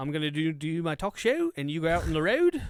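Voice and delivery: mock Australian accent.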